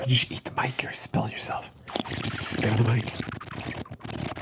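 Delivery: soft, unvoiced ASMR whisper.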